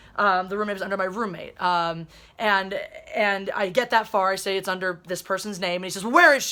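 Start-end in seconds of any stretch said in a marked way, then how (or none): 6.2-6.6 mock aggressive, loud, confrontational delivery. Recreating what a man asked about the roommate, imitating an aggressive guy. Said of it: "I'm trying to recreate this as realistic as possible. ... This is literally how how aggressive this guy's".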